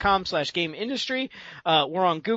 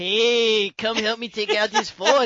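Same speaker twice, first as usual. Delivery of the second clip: cartoon Mexican accent with hey drawn out; 4 semitones higher, 4 dB louder than usual. Describing a game mission where a coyote talked like a mascot, in a Taco Bell dog voice. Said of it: "talked like the Taco Bell dog".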